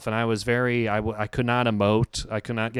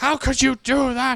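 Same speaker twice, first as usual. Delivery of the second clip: mock scream at top of lungs, much higher; 5 dB louder than usual. Playing The Graduate, the girlfriend learns he slept with her mom, imitating a scream. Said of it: "She's literally screaming at the top of her lungs".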